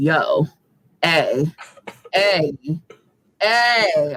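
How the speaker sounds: very slow, insistent, drawn-out, demanding cat-like calls. Describing the cat wanting to eat, the speaker imitates it: imitating a very vocal cat. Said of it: "She's very vocal".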